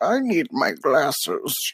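put-on very slow, high, harmless-sounding old man voice. A show host demonstrates the voice they just used, old man voice. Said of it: "It's kind of just like an old man".

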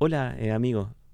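ordinary delivery

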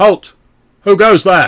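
ringing, very loud, high-pitched, shrill shout. A voice rings out in the darkness as the players approach, loud shout. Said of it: "a loud voice rings out and says".

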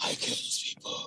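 breathy whisper, breathing hard. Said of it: "breathing hard".

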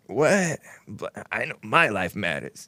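put-on breathy creaky voice.

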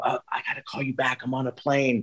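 soft, hushed, keep-it-down whisper. Describing answering a phone call on a plane: imitating own whisper. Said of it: "I whisper and go".

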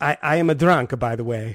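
put-on Italian accent. Reading a friend's text message aloud on request: put-on Italian accent. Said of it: "Italian accent, please".

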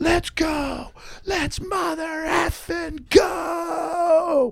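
put-on top-of-lungs holler, very high, very slow, drawn-out. Retelling how a high school coach cheered his returning team, retelling a coach's yell. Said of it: "At the top of his lungs".

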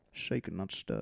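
soft, quiet, accurate Scottish accent. Trying out impressions for the other speaker, doing a Sean Connery impression. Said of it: "It's like he's in the room".

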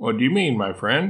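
plain

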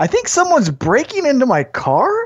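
high, acted, most innocent and confused wondering. Retelling noticing the dome light on in the parked car, retelling an innocent, confused voice. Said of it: "in the most innocent, confused voice".

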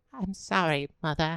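put-on feeble, sickly, bedridden-sounding boy voice. Acting out a friend as a bedridden sick boy from the fifteen hundreds: put-on sickly bedridden boy. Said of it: "He's like".

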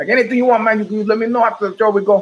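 bad Vietnamese accent. Speaker retelling what a driver said before a show, bad vietnamese accent imitation. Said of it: "a very bad imitation of my Vietnamese driver".

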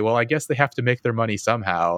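scornful, mocking delivery with laughter through the words. Retelling how a woman scoffed at a crime-thriller writer's family, retelling a mocking laugh. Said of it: "mockingly laugh and say".

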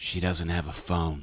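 very low, hushed muttering under the breath. Retelling what the friend Maria said to the speaker, imitating a muttered aside. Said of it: "sort of under her breath".

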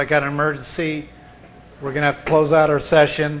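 ordinary delivery

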